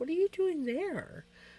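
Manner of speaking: high, swooping pet voice. Voicing the pet's thoughts as he finds his spot taken: voicing Vinny. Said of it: "Vinny's come in like".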